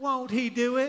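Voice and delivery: put-on Texan accent. Leading an online audience to say a family phrase together, in your best Texan accent. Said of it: "let's say it in our best Texan accent together".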